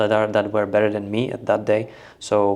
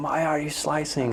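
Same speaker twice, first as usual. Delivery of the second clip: acted-out high, mild, scolding half-yell; 6 semitones higher, 4 dB quieter than usual. Retelling what mom did during childhood tennis practice: imitating mom screaming. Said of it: "My mom would be screaming".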